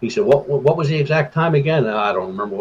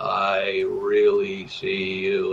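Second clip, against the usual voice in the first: menacing, hushed, very slow, drawn-out delivery; 2 semitones lower, 6 dB quieter than usual. Retelling what a husky man's voice said a second time, retelling a sinister voice. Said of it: "but more sinister".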